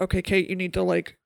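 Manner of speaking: normal talking voice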